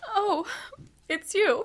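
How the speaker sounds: high, tearful voice, crying through words. Connie, caught crying, greets her mother: crying. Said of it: "Why are you crying".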